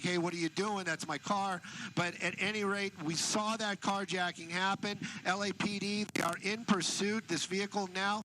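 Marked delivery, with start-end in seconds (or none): none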